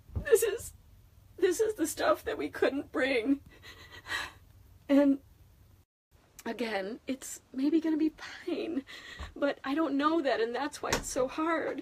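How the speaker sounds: tearful, high crying voice. Speaking to strangers on the internet while keeping it together for the kids: crying. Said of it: "that's why I'm crying to you".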